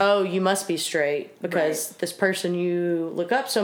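normal talking voice

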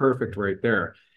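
ordinary delivery

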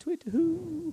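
very high hooting owl cry. Joking about owls foretelling death, imitating an owl call. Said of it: "'cause they go".

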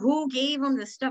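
play-acted, high, blaming, demanding, accusing screaming outcry. Retelling storming into the center, imitating her own screaming. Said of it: "I was screaming".

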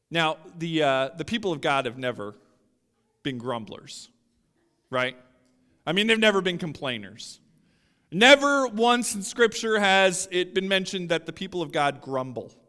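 sarcastic, mock-earnest, straight-faced with a wink.

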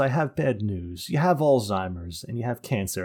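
ordinary talk

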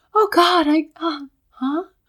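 light, airy, breezy, floaty, high and slow. Retelling a film character's reaction: imitating a light airy voice. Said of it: "so light and, like, airy".

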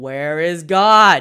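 very loud, booming, demanding. Retelling a preacher repeating his question to two scared boys, even louder. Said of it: "repeated his question even louder".

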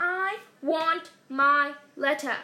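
very slow, loud, emphatic, drawn-out shout. Narrator reads Harry arguing with Uncle Vernon, shouted. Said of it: "he shouted".

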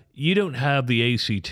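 put-on posh British accent. Speaker retells what they told him with his mom there, put-on British Oxford accent. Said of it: "I'm just putting on an accent here to make it sound like Yale or British or Oxford".

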